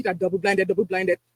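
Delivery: very low, mechanical, robotic computer voice. Mocking doctors who demand double-blinded studies, sounding like a computer. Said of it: "speak sounding like a computer".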